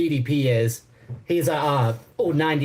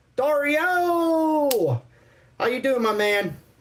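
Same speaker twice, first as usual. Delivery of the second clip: very high, very slow, drawn-out stretched voice; 10 semitones higher than usual. Showing how the bald, bulky dude talks: imitating the bald bulky dude. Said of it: "he talks like this".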